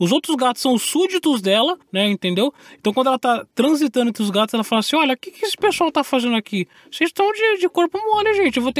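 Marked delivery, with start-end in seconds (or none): 5.0-8.6 put-on old lady voice, much higher pitch. Voicing a cat who rules over the other cats, speak in an old lady voice. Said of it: "E é quase uma voz de uma senhora".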